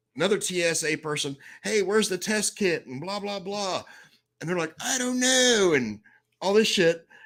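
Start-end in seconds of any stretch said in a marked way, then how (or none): 1.7-2.9 mock shouting. Retelling an airport security agent yelling to a coworker: imitating someone yelling. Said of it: "she's yelling at somebody".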